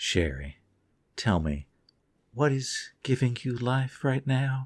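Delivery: put-on space worm character voice. Asking another speaker what is giving them joy lately: space worm voice. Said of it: "in my best space worm voice".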